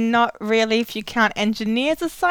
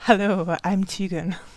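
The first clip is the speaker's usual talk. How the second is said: put-on seductive bedroom voice; 6 semitones lower, 3 dB quieter than usual. Co-host introduces themself on the podcast in a bedroom voice. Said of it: "This is my bedroom voice".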